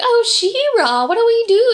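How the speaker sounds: put-on very high, odd, weird elderly-woman voice. Describing a pretty woman who talks strangely, imitate her weird old lady voice. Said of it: "she has a weird old lady voice".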